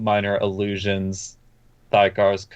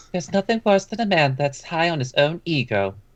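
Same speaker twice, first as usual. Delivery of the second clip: higher-pitched woman's voice; 8 semitones higher than usual. Narrating a voice that Fisher hears in the mind, in a woman's voice. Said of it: "you'll hear in a woman's voice".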